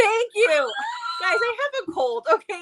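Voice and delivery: relieved outburst with laughter.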